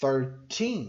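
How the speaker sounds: put-on thirteen with stress on final syllable -teen. Contrasting thirteen and thirty: stress on 'teen' in thirteen. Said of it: "o foco tá no teen".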